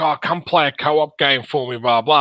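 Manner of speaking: ordinary talk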